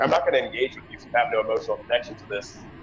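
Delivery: fast, arrogant, aloof tone. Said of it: "could almost be perceived as arrogant".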